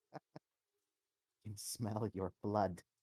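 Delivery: quiet, muttered whisper. A narrator voices a character as a player walks down the stairs, whispering to himself. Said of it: "starts whispering to himself".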